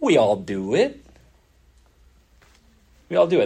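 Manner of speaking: heavily sarcastic, swooping sing-song. Answering own question on how the church gets it done: sarcastic tone. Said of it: "That sounded really sarcastic".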